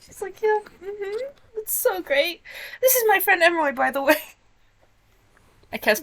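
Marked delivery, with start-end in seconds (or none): 0.4-4.2 high, tearful voice, holding back tears. Voicing a character introducing her friend: holding back tears. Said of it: "She tries so hard not to cry".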